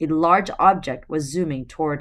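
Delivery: ordinary delivery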